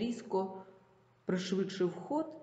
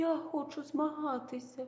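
thin, high, squeaky little voice; 8 semitones higher, 4 dB quieter than usual. Someone in the crowd suddenly volunteers to compete against the bully: squeaky thin little voice. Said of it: "пропищав тоненьким голоском".

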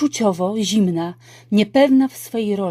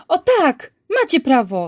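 bursting out, slow, deliberate, heavy and drawn-out; 5 semitones higher than usual. Teacher Pani Jedwabińska answers students who refuse the test, bursting out. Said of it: "wybuchnęła pani Jedwabińska".

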